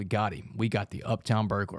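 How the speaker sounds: usual speaking voice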